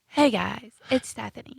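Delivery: very soft, quiet, soft-spoken voice. Imitating a radio caller after being asked to do her voice: Stephanie voice, very soft. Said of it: "Now do Stephanie".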